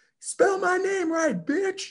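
very high mock scream, shrieking.

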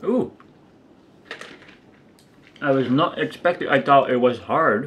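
speaking with mouth full of food. Trying loose candy on camera, the speaker keeps talking with a mouth full. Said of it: "I won't speak with my mouth, with food in my mouth".

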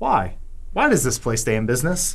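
normal talking voice

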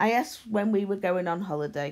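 ordinary talk

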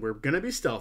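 ordinary delivery

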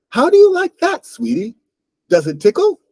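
very high, loud, flute-like voice, cracking. Narrator reads the words of a voice heard ahead, high fluting voice, cracking. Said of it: "It was a high, fluting voice that cracked on sweetie and tickle".

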